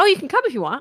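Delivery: eager excited voice. Contrasting ways an invitation can sound, acting out the excited version.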